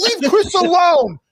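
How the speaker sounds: protective, pleading, begging tone. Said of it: "made, uh, [name] sound like that one".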